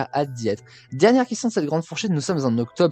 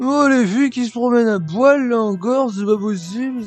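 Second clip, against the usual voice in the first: very high-pitched put-on lady's voice; 10 semitones higher, 4 dB louder than usual. Show a listener who praises your imitations another one, a Geneviève de Fontenay impression. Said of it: "Et Geneviève de Fontenay aussi".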